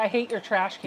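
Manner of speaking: ordinary talk, nothing marked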